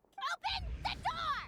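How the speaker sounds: loud yelling, shouting. Demanding that someone behind a locked door open it: yelling. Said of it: "Stop yelling".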